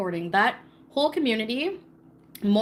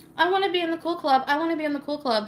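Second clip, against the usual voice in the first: put-on high teenage-girl voice, taunting; 5 semitones higher than usual. Mocking a woman who acts like a teen girl: mocking imitation of a teen girl. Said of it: "women acting like teenage girls in high school".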